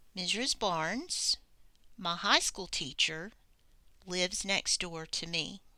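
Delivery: distinct pauses at each comma. Reading an example sentence aloud to show the comma pauses, with a clear pause at the commas. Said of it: "Do you hear another pause in my voice?".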